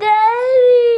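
tearful sob on the word.

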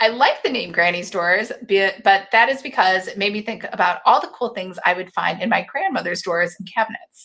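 normal talking voice

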